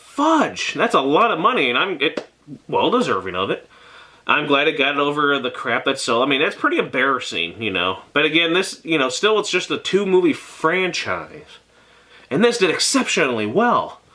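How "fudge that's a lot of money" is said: high-pitched, swooping cartoon beaver voice. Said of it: "Terrible impression of Dacus from Angry Beavers".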